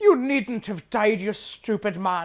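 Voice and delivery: put-on Scottish-sounding accent. Act out the line that popped into your head, as Arianne Martell in a Scottish-sounding accent. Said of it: "His Dorne accent is like Minerva McGonagall Scottish".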